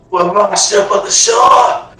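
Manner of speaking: dry, parched voice. Trying out the shipwreck survivor voice for another player: parched shipwreck survivor voice. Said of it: "Like that?".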